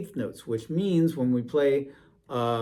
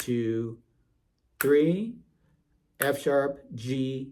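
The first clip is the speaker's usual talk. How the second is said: extremely slow delivery. Saying note names aloud in rhythm for learners: saying notes very, very slowly. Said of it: "say the notes out loud very, very slowly".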